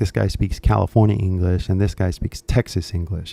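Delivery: ordinary delivery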